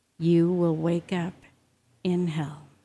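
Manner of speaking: very quiet, hushed, soft, sobering voice. Storyteller voicing the Lord speaking to a doomed man: very quiet, sobering voice. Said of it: "a very quiet, sobering voice".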